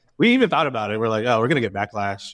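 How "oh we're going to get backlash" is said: normal talking voice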